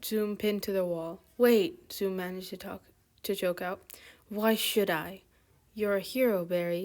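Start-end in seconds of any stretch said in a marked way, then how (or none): none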